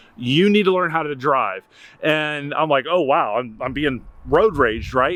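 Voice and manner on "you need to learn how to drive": usual speaking voice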